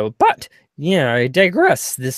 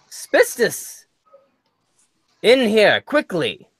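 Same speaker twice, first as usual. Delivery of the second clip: loud, urgent calling out; 6 semitones higher than usual. A game master voices a character summoning spistus, shouting. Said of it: "He shouts".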